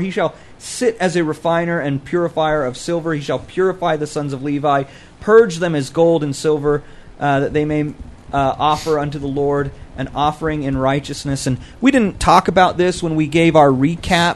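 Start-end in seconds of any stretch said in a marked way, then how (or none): none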